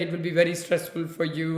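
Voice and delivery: ordinary talk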